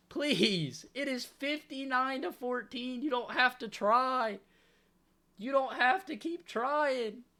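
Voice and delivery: earnestly pleading, begging tone. Watching a lopsided game, pleading with the team to take a knee: begging. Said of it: "I'm begging".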